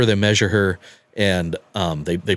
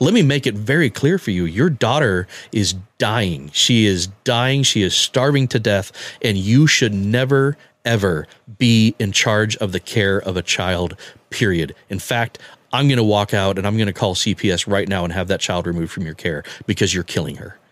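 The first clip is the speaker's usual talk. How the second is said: ordinary talk, nothing marked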